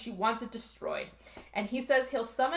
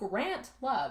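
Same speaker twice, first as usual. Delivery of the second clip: normal talking voice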